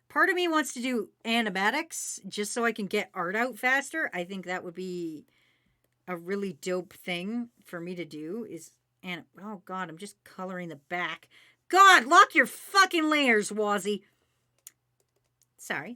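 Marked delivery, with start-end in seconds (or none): 11.6-14.0 loud, high, scolding yell. Artist scolding themself for coloring without locking layers, yelling at self. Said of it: "I just gotta yell at myself".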